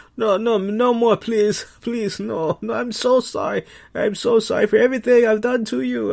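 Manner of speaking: mock begging pleas, pitched very high. Recapping a wrestling match, acting out Shinsuke Nakamura begging and pleading. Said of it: "begging, pleading".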